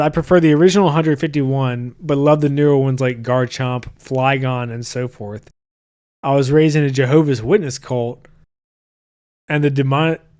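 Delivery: normal talking voice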